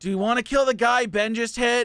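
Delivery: high shout in a put-on character voice. Voicing a character calling out to allies in battle: shouting in character. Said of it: "He just shouts out".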